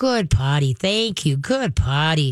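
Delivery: steady, easygoing, very calm and relaxed voice. Demonstrating what to say when she goes potty, very calm voice. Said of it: "stay very calm and go".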